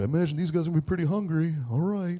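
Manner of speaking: high, quick, offhand made-up character voice. Telling a story about Jesus meeting people's practical needs, speak his words in a Jesus voice. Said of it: "That's my Jesus voice".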